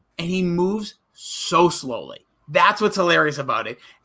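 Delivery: ordinary delivery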